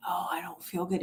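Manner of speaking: put-on croaky, hoarse, sickly voice. Retelling calling in sick to work years ago: imitating a fake hoarse sick voice. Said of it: "make sure that my voice sounded hoarse".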